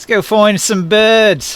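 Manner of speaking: put-on British accent, loud and high. Acting a scene, bantering with another character, in a British accent. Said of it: "Shelly has a British accent now".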